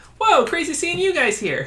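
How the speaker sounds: very high, swooping, bouncy, squeaky voice. Narrating a game scene, voicing the dragon on the stool next to the players in a squeaky Spree voice. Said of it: "you hear a squeaky voice".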